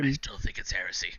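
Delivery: theatrical whisper. Voicing a character who whispers to another about a heretic: whispering. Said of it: "And he's whispering over".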